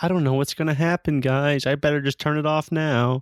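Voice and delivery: heavily sarcastic, dripping with sarcasm. Riffing on Tom Brady's halftime comment about the score, mock-sarcastic Tom Brady. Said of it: "Like being so sarcastic".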